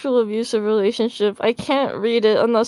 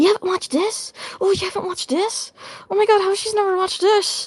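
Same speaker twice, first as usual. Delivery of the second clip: put-on, very high, stunned, shocked disbelief; 9 semitones higher than usual. Retelling viewers' reactions to a tier list: imitating shocked viewers. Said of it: "people were, like, shocked".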